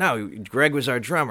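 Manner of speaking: ordinary delivery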